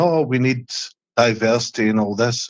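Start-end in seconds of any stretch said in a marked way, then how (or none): none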